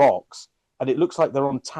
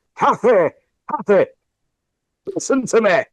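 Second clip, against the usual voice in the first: put-on raised, pitched-up Northern English accent; 8 semitones higher, 6 dB louder than usual. Recounting a scene from a Wuthering Heights film, Elordi's North Country accent. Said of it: "he is doing like a North Country accent".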